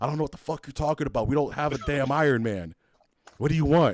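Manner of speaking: acted, angry, fed-up ranting voice. Retelling a sandwich worker who cussed him out: imitating an angry sandwich worker. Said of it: "He got pissed off".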